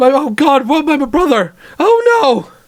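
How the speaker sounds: deeply upset voice. Speaker voicing a character who is asked why he is scared, very distressed. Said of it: "He is very distressed".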